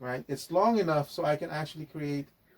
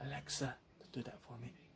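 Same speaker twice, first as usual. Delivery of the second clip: very quiet, hushed, barely voiced whisper; 3 semitones lower, 18 dB quieter than usual. Speaker mentions the voice assistant by name, whispering. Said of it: "I had to whisper".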